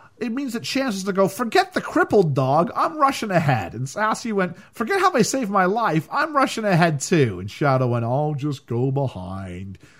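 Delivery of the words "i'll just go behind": low, soft, very slow drawl. Retelling Shadow's line from the story, in an Eeyore voice. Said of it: "That was a really good Eeyore impression".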